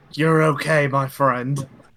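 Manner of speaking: whispering. Player's character casting a healing word on an ally, whispering in his ear. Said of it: "I just like whisper in his ear".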